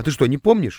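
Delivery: ordinary delivery, nothing marked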